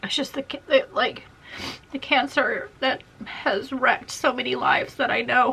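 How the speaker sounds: openly crying, tearful through the words. Speaker back after stepping away to collect themselves, crying. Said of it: "I'm still crying".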